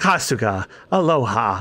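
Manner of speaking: very low, deep put-on character voice. Doing the Sujimon sensei's lines on request: Keith Silverstein impression. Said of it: "Do you want me to do the voice? ... I'm trying to do an impression of Keith Silverstein!".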